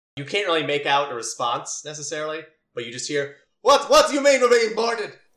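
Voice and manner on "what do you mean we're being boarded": furious yell, very high, very loud, shrill. Narrating a story, voicing a radio voice from inside the closet: angry voice over radio. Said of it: "You hear like an angry sounding person".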